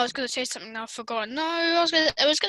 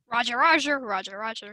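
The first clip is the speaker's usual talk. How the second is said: robotic battle droid soldier voice; 4 semitones lower than usual. Doing Star Wars memes: battle droid voice. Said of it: "the droids are talking".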